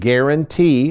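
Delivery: the word "guarantee" strongly stressed. Quizzing Aaron on financial products, stress on "guarantee". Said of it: "I'm emphasizing the word guarantee".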